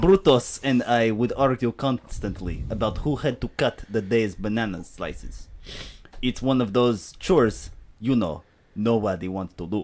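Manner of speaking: put-on Russian accent. Reading a product review aloud in a Russian accent. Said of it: "I don't know what happened to the accent".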